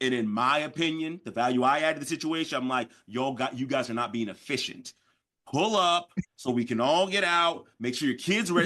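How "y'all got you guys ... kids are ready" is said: ordinary delivery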